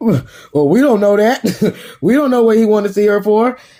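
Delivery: choked, spluttering voice. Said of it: "he choking on his spit".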